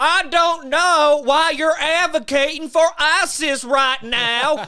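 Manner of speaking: very loud, high-pitched, condescending, talking-down tone. Accusing someone of advocating for terrorists: Nancy Grace voice. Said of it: "he and Nancy Grace talk the exact same way".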